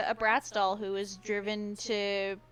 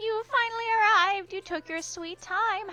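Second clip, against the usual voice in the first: put-on cute ghost character voice; 11 semitones higher, 3 dB louder than usual. Introducing a cute ghost character to the listener and voicing her: cute ghost voice. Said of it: "that's the voice you gave her".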